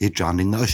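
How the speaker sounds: ordinary talk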